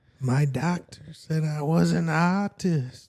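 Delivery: slow, haunting, spooky ghost voice. Right after a podcast plug, the host says this line in a ghostly voice. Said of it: "that sounds like a ghost".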